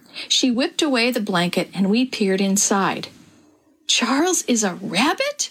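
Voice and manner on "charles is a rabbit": gasping, slower pace. Beck, seeing the surprise Mom has brought home, gasped. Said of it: "Beck gasped".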